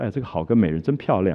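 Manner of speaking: ordinary talk, nothing marked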